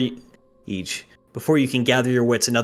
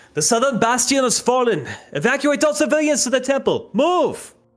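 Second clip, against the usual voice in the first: barked, booming shout, pitched very high; 13 semitones higher than usual. A narrator voices a warrior ordering civilians to evacuate, booming shout. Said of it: "You hear an unknown voice shout".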